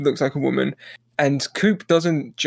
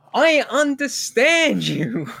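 put-on hard-of-hearing yelling voice, higher; 10 semitones higher than usual. Retelling a scene where a character with earpieces can't hear: imitating Gordon Cole yelling. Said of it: "so he yells every line".

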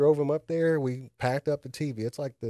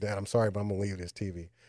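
apologetic, sorry tone, lower pitch; 4 semitones lower than usual. Retelling a son's words about leaving the tv: imitating son's apologetic tone. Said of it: "that was the tone I got from him".

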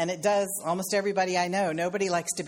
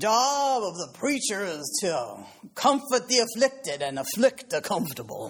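put-on preacher's pulpit voice. Quoting an old saw amongst preachers as your uncle sounded in the pulpit, in Reverend Uncle Henry's voice. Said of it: "I'm going to say this in my Reverend Uncle Henry's voice".

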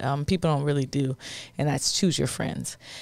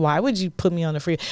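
normal talking voice

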